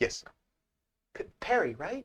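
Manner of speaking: tiny, hesitant, high, timid half-whisper, stammering on P. Voicing the twins waiting at the staircase as they say your name: small timid half-whisper. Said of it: "a small, timid voice kind of whisper your name".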